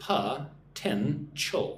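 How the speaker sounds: slow, sounded out syllable by syllable. Showing learners how to say a word: slow, syllable by syllable. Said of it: "Say it with me nice and slow".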